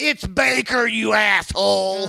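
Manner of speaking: very high, slow, dragging hoarse stoner drawl. Retelling a comedy show headliner correcting a mispronounced name: imitating a hoarse pothead voice. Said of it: "pothead kinda guy with a really hoarse voice".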